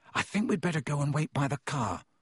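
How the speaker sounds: ordinary delivery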